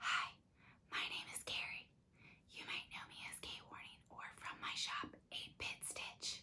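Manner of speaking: whispering softly. Introducing yourself and your shop at the start of an asmr video: whispering. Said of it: "Why am I whispering today?".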